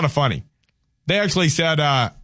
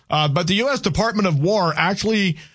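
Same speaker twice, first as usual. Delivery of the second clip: ordinary talk, nothing marked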